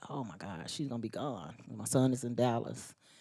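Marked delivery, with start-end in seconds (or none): 0.1-1.5 very quiet, low, hushed, tearful, choked-up crying. A parent recalls sitting on the bed before their daughter's graduation, retelling choking up crying. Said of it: "I was literally like choking up, crying".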